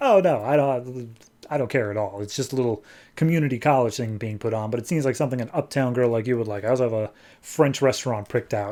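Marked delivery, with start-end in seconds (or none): none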